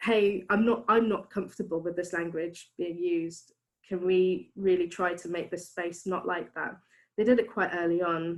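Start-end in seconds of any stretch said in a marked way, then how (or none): none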